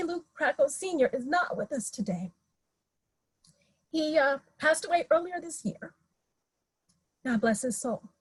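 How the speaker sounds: soft voice, a little choked up. Remembering a man who passed away earlier this year, a little choked up. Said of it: "I'm a little choked up".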